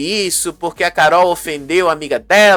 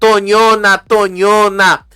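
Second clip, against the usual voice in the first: light, taunting yelled voice; 3 semitones higher than usual. Retelling the fight, quoting another contestant: imitating someone yelling an insult. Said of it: "a Martina gritando".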